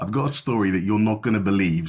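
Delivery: ordinary delivery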